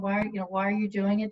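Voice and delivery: ordinary delivery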